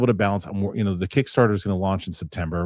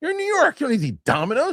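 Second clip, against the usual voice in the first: very high, judging sing-song, swooping pitch. Retelling what she said while spying on the neighbors, mock-judgy tone. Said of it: "just judging the guy for eating Domino's".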